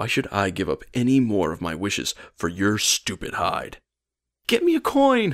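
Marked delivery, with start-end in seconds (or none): 4.5-5.3 very high, imploring, begging tone. A man with a mob goon on his way to get him, begging. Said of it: "Carl begged me".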